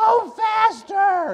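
shrill, very high-voiced, loud shout. Retelling driving off with Ronnie's face at the windshield: imitating Ronnie's high voice. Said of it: "He had a high voice".

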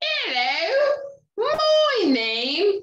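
very high, thick, put-on British accent. Starting to read a book aloud to a genie: Mrs. Featherbottom strong British accent. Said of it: "I give the main character a strong British accent".

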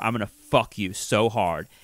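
forceful, aggressive half-whisper, very close up. Retelling what someone half-whispered into a woman's ear: imitating an aggressive half-whisper. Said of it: "whispered directly into her ear".

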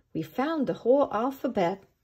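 usual speaking voice

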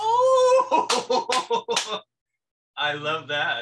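drawn-out laughing words, very loud, high, delighted. Reacting to the other speaker's answer to a word prompt, laughing.

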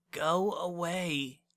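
high-pitched mutter under the breath, "away" drawn out. A girl hiding under her blanket, to someone trying to rouse her; muttered. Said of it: "she muttered again".

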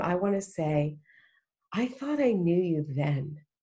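normal talking voice

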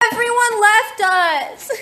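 shrill, very loud, high-pitched shout. Speaking to a companion after the others went home: loud. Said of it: "You're so loud".

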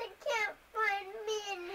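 whiny complaining voice. A child in the background interrupts the nail demonstration, whining. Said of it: "Why are you whining".

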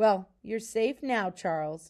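usual speaking voice

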